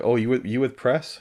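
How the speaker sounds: heavy put-on American accent. Retelling what a guy in a hotel conference room said, thick american accent. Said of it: "this guy with a thick American accent was like".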